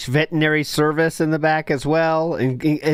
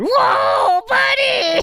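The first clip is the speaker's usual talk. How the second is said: very high-pitched voice. Imitating how Triple P talks on the phone. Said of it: "That's how Triple P talks on the phone".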